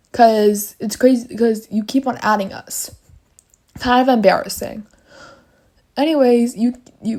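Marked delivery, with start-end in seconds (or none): 6.0-7.2 stuttering over words. Speaker confronting someone who keeps adding them, stuttering. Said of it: "I'm stuttering so bad right now".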